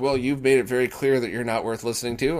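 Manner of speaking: plain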